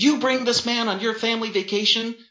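very high, venomous, spitting aggression. Jennifer turns on her younger brother while hitting him, spitting in rapid-fire aggression. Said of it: "She spat in rapid-fire aggression".

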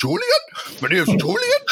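very high, sing-song, swooping Geordie accent. Trying out how a name sounds in regional accents, in a Newcastle accent. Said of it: "sitted nice with the Newcastle accent".

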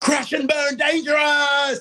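very high-pitched, stretched-out, drawn-out yell. Retelling what he yells when a wrestler lands on their head: imitating someone yelling. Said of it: "and he yells out".

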